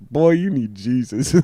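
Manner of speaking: mock-drunk put-on delivery. Retelling what they drunkenly told a guy before walking out, imitating own drunk speech. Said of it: "because I was super drunk".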